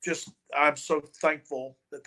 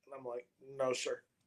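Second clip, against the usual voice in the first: ordinary talk, nothing marked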